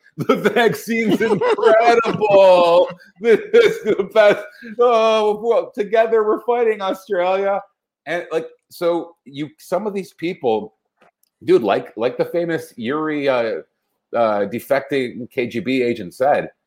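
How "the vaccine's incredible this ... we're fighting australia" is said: very high, overjoyed, put-on gushing voice. Retelling a woman's video after her heart almost exploded: mock-gushing imitation of a woman. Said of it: "and she's like".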